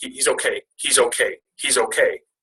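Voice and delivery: acted-out halting, slow, tearful words through sobs. Retelling a wife's phone call about their son: imitating Katie crying. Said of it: "And she's crying".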